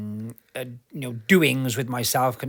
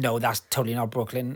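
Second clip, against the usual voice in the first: ordinary talk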